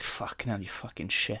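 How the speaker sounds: very soft under-the-breath mutter. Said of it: "or something under their breath".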